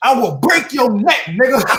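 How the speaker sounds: fiery, impassioned preaching cadence. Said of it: "sounded like [name] was preaching".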